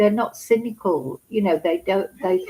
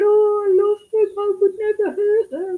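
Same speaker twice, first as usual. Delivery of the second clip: very high, put-on, weepy, pleading fake crying voice; 13 semitones higher, 3 dB louder than usual. Retelling a media interview by the car: imitating Erin's fake crying. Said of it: "she did her fake crying and fake tears".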